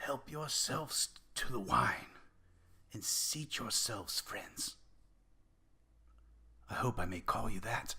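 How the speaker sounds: dry, raspy voice. A woman by the fire welcomes her guests, in a dry, raspy voice. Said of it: "In a dry, raspy voice, she says".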